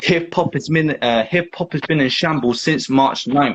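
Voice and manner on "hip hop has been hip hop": plain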